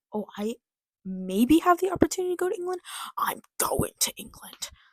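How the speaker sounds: mock giddy eight-year-old voice, high, swooping, excited. Mocking someone by acting out an eight-year-old's thinking: imitating an excited eight-year-old. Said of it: "He's like".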